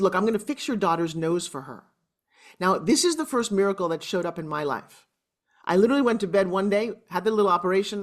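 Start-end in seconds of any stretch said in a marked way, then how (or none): none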